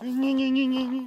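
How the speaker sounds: high, loud, bratty mocking squeal of "gni gni".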